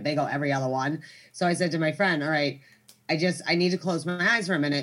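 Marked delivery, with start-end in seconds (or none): none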